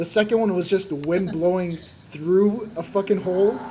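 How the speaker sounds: ordinary talk, nothing marked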